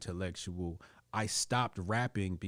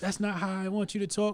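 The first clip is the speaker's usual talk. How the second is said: mock angry scolding tone, higher and louder; 13 semitones higher, 5 dB louder than usual. Retelling mom's scolding on the way home: imitating mom scolding. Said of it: "she chewed me out".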